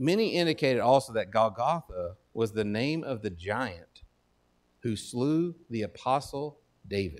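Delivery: careful, slow, deliberate word-by-word reading. Speaker reads a quoted answer so listeners get all of it, reading slowly. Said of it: "I got to read it slow".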